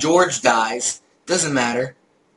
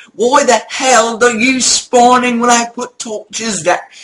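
shrill, very high, loud put-on British accent; 10 semitones higher, 7 dB louder than usual. Retelling yelling at a Minecraft ogre: imitating own British accent. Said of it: "I started talking like this British accent".

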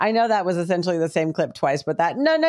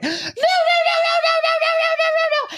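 mock scared child scream, much higher, slower; 3 dB louder than usual. Retelling a scared child while his big brother watches, imitating a child screaming. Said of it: "screaming just like that, but really loud".

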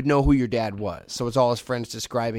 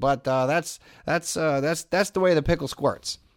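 nonchalant, offhand, casually tossed-off delivery; 4 semitones higher than usual. Retelling the pep talk's closing line: nonchalant Bing Russell voice. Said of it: "he said it nonchalant".

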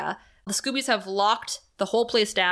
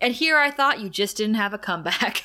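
ordinary talk

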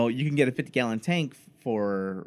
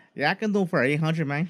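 put-on Mexican accent, much higher pitch; 5 semitones higher than usual. Saying it at the same time as the others, the speaker does a Mexican accent. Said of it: "be your Mexican guy".

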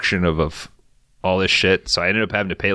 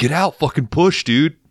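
play-acted, high-pitched shouting; 8 semitones higher, 3 dB louder than usual. After sliding into a ditch, speaker retells yelling at Danny to push. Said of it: "And I just started yelling at Danny".

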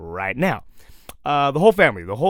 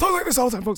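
put-on hoarse coach voice, higher pitch; 10 semitones higher than usual. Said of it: "he talks like this".

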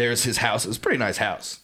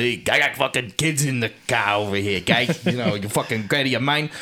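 put-on man's voice with a Long Island accent. Retelling what an angry father would shout: typical Long Island dad voice. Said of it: "my dad is the typical fucking Long Island".

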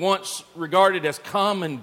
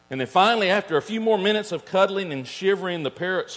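ordinary delivery

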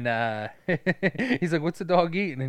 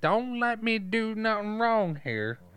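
higher-pitched, slow, drawling southern twang; 8 semitones higher than usual. Quoting a police officer's line, high-pitched southern twang. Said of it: "He's got like that southern twang to it, but he's also got like a higher pitched voice".

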